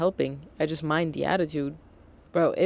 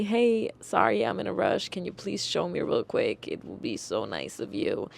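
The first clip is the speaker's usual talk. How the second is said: mock courteous, apologetic, polite tone; 3 semitones higher than usual. Showing how a customer could ask instead: imitating a polite request. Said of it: "If you ask me politely".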